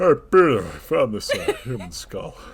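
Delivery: very loud, animated, swooping belted cartoon voice. Speaker acts out a paleoanthropologist's line as a Family Guy character: Joe Swanson impression. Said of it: "you could do the impression better than me".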